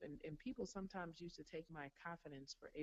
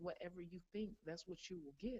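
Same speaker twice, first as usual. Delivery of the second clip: ordinary talk, nothing marked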